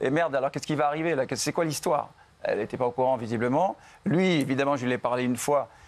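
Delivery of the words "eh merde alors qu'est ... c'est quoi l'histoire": ordinary talk, nothing marked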